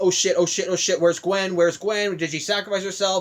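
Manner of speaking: ordinary talk, nothing marked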